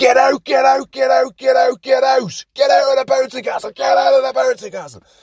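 play-acted, very high-pitched shrieking scream. Retelling screaming at people diving into a bouncing castle: retelling screaming at people. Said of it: "I start screaming at them".

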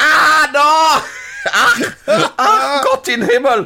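put-on very high, very slow wailing in German accent. Retelling a Tarzan episode, imitating a Nazi falling to a lion. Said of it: "you hear the Nazi go".

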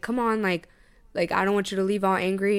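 ordinary delivery

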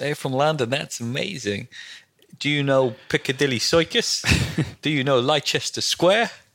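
attempted American accent. Retelling meeting an American family as a kid, in an American accent. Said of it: "I'm trying to do an American accent".

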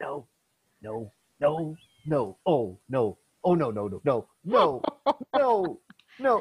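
very slow mumbling under the breath. Retelling an actor onstage about to be shot: imitating muttering under breath. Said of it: "is kind of muttering under his breath".

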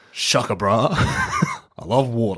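slow, swooping drawl, words dragged out. Trying out a voice for speaking Aquan: Jason Momoa as Aquaman voice. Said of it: "I should just speak like Aquaman. As in Jason Momoa".

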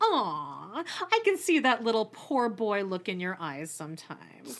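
play-acted, pitying sing-song coo, drawn-out aw. Retelling another person's remark in a mock-condescending voice. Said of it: "In a very condescending voice".

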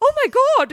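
play-acted, shrill, very high, very loud panicked shriek. Retelling a little girl's reaction in a video: imitating a panicked girl. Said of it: "in a really panicked way".

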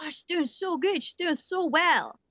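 cheery, admiring cooing.

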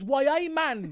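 loud, bad Jamaican accent slipping into Geordie. Mocking a man who tried a jamaican accent, the speaker imitates him: wrong jamaican accent, like geordie. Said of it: "You got the accent completely wrong".

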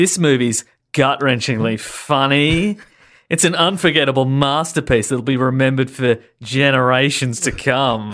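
scoffing sarcastic tone, drawn out and funny. Rereading a glowing movie review blurb aloud, sarcastic. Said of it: "Can you reread part of one of those in a sarcastic tone?".

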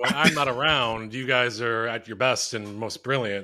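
ordinary talk

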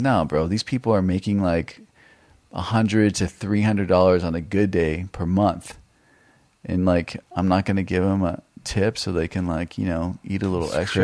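ordinary delivery

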